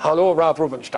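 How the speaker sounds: put-on German accent. Retelling a phone call from a caller: imitating a german accent. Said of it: "in this German accent".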